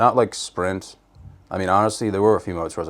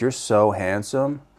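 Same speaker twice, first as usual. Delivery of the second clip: put-on very positive, sweet tone; 3 semitones higher than usual. Retelling what a date said, imitating someone speaking very positively. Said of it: "very positively".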